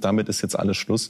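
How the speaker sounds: plain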